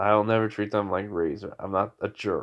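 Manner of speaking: ordinary talk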